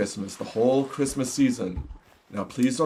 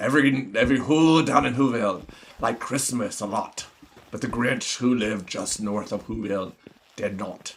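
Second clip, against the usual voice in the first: pirate accent. Telling the grinch story for viewers, done in a pirate voice. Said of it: "I'll do it like a pirate".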